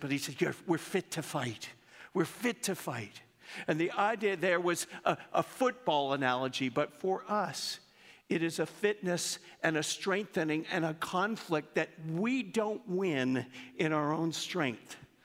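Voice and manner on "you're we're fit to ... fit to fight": clumsy, mangled, bad put-on Irish accent. Quoting a coach's phrase in a put-on irish accent. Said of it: "forgive me for slaughtering the accent".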